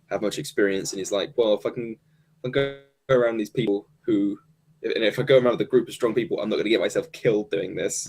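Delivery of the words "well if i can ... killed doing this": ordinary delivery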